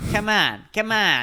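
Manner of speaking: put-on Boston accent. Riffing as a Boston guy inviting someone to grab a beer: mock Boston accent. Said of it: "I am just like a Boston fucking like Boston person".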